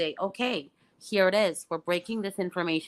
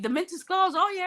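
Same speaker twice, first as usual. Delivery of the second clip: put-on casual tone, much higher; 14 semitones higher than usual. Speaker retells what another person said, imitating a casual remark. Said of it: "says it so casually".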